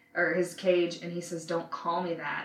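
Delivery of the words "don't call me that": usual speaking voice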